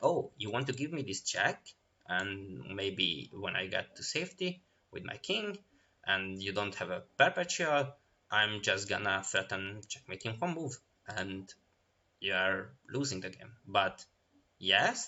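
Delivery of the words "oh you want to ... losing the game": usual speaking voice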